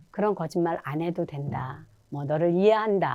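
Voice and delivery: soft, gentle, kind reassuring tone.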